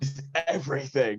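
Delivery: mock, mild, token screamed yell. Asking who the man was who screamed at the speaker: imitating a man screaming. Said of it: "Who's that guy that screamed".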